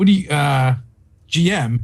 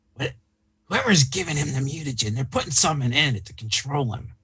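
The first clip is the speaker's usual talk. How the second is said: hushed, lowered, confiding voice; 6 dB quieter than usual. Playing a goblin confiding in another character, in a lowered voice. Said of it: "lower my voice".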